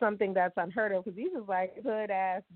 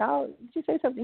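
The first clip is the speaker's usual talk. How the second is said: mock very sweet, nice, polite tone; 4 semitones higher than usual. Retelling asking a man if he said something: imitating own sweet tone. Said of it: "I was very sweet".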